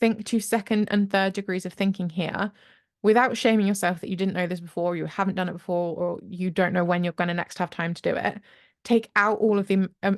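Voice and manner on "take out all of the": tripping and stammering over words. Coaching listeners on planning ahead, stammering. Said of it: "stammering now".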